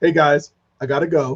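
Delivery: unhurried, slow, drawn-out delivery. Retelling how a friend rushed off when the tornado came: imitating Greg. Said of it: "he was like this".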